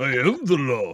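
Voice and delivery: speech with the lip hanging slack, droopy-lipped. Joining in on the movie line: Sylvester Stallone voice. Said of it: "love our impressions of Stallone".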